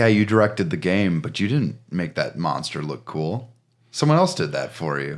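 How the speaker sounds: ordinary delivery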